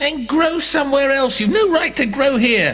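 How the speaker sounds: put-out, cranky, grouchy grumbling. Narrator reads one courtroom character complaining to another, grumbling. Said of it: "grumbled the Dormouse".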